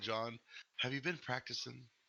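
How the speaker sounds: hushed, quiet, soft, low-key voice. Voicing the woman at the remedies shop, speaking to a player: said quietly. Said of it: "she kinda says quietly".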